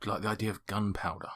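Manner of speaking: put-on close whisper. Recounting how Davov leans in to speak, retelling Davov's whisper. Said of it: "he leans in and just whispers".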